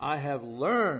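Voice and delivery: heavy emphasis landing on learned. Repeating I have learned to emphasize it, strong stress on learned. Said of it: "Let me emphasize that word".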